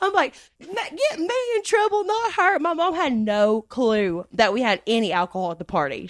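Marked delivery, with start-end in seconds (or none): 0.6-2.6 mock, very high-pitched, tearful bawling voice. Retelling a plea to police about their mom, imitating own past crying. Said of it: "I'm bawling, crying".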